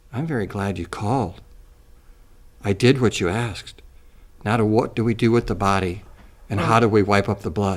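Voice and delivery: low, dropped voice. Suggesting what to say to a caller, saying it in a low voice. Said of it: "in a low voice say".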